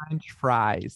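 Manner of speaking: put-on American accent with Australian vowels showing through. Repeating the other speaker's impression of an australian doing an american accent. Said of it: "an impression of an Australian person doing an American accent".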